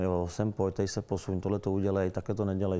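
usual speaking voice

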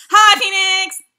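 very high, very loud, high-pitched shout. Greeting someone at the start of a stream: loud greeting. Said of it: "That was loud".

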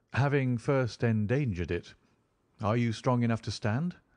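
ordinary delivery

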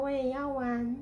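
plain reading voice

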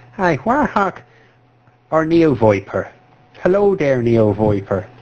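speaking in a put-on Irish accent. Asked to do it irish, the speaker greets warhawk and neo viper: put-on irish accent. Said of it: "Just fucking do it Irish".

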